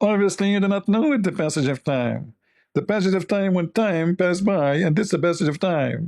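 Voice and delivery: put-on high, nasal politician voice. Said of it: "she speaks from her nose".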